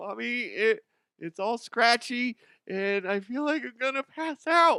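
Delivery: put-on very high, whining little-baby voice. Playing a child talking to mommy in a skit, whining like a little baby. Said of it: "quit being a little baby".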